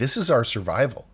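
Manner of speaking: ordinary talk, nothing marked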